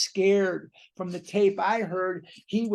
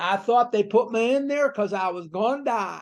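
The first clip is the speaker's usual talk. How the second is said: put-on strong Kentucky accent, laid on thick. Retelling what a man said on an old tape: imitating Bill Dotson's thick Kentucky accent. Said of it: "very thick Kentucky accent".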